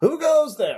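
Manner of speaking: very high call, as if from afar. Voicing a stranger who hears travelers approach: calling out. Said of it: "one of their voices call up".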